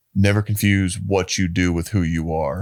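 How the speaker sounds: normal talking voice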